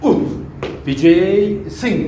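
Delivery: slow, drawn-out, effortful ooh call. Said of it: "These have accents, right?".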